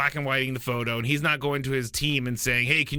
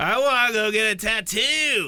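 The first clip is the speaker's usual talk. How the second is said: put-on very slow, pitched-up, dragged-out drunk voice; 8 semitones higher, 4 dB louder than usual. Imagining a drunk quarterback asking for a tattoo: imitating drunk Tom Brady. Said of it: "drunk Tom Brady".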